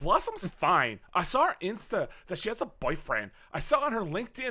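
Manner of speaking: high-pitched, lifted character voice. Doing a dramatic rereading of a script, playing the role: Bubbles voice. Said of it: "I will play the role of Bubbles".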